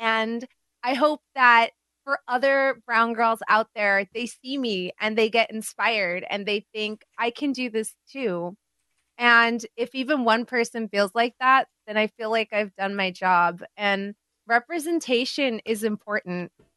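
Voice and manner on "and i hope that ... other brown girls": usual speaking voice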